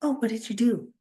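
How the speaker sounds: ordinary talk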